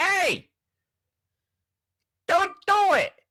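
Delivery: put-on very high 1930s New York accent. Voicing the little voice in their head, a 1930s New York accent. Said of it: "that voice sounds like he's from New York in the thirties".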